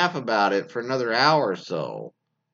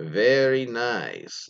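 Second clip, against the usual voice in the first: put-on comedic Eastern European accent. Reading a submitted story, the speaker quotes her boyfriend's Borat impression. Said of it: "in his best Borat impression".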